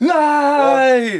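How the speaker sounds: mock high, loud, scared, panicky shout.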